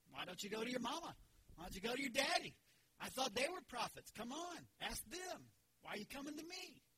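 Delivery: put-on cheeky, sassy, snarky tone with swooping pitch. Acting out a prophet's reply to the kings: imitating a sassy retort. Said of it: "little sassy, a little snarky".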